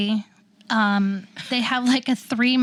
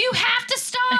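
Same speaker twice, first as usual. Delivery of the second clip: acted scream, higher pitch; 13 semitones higher than usual. Retelling a car ride where her mom panicked: imitating mom screaming. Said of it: "My mom is screaming".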